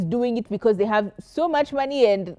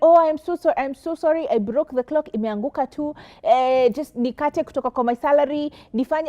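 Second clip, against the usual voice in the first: put-on meek humble tone, higher; 5 semitones higher than usual. Retelling a worker's apology for breaking a clock: imitating a humble apology. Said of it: "she came with such humility".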